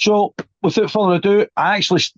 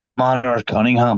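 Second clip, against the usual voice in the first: put-on Northern Irish accent, much lower; 8 semitones lower than usual. Saying a band's name again: Northern Irish accent. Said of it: "I'm going to say it in like a Northern Irish accent".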